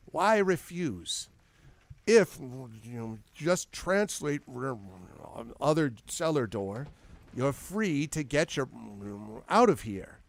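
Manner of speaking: annoyed, irritated voice with a hint of menace. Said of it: "irritated and, uh, maybe even a little bit threatening".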